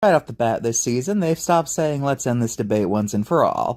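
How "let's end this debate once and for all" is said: ordinary talk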